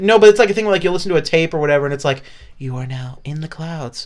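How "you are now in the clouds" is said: put-on soothing voice, quieter. Giving an example of a relaxation tape: imitating a soothing relaxation tape. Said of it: "you're trying to soothe people".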